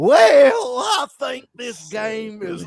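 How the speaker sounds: very slow, very high, drawn-out Western cowboy drawl. Retelling how a reviewer dressed as a cowboy spoke: imitating a cowboy accent. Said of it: "Dressed as a cowboy, and he's doing".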